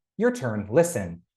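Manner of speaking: ordinary talk, nothing marked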